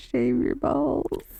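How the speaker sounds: whispered. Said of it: "I was gonna whisper".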